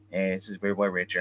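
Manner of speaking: flat monotone voice, dead flat throughout. Imitating how Richard introduces himself: Richard's monotone voice. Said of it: "he kinda kept the same monotone voice".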